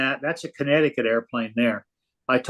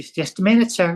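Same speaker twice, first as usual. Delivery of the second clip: put-on small, high-pitched voice with southern accent; 6 semitones higher than usual. Retelling a woman's reply when he asked how he did, in a little southern voice. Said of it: "in this little southern voice".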